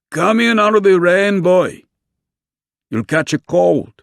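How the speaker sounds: rough, gruff voice, very high-pitched and loud. Reading a story aloud, an old man calling a boy in from the rain: gruff voice. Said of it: "the old man said in a gruff voice".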